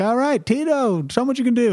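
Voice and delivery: put-on very high child-star voice, pitched way up like a kid. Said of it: "I do this whole act of him".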